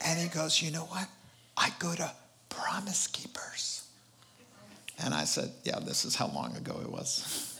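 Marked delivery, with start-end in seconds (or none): 0.6-3.8 quiet, imitated whisper. Retelling what a man said after the prayer: imitating someone whispering. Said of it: "Why are we whispering?".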